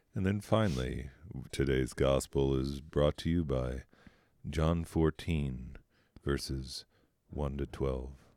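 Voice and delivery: low, soft late-night jazz radio DJ voice. Announcing the day's Bible readings, in a late-night jazz station voice. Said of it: "Don't I sound like a guy on a late night jazz station?".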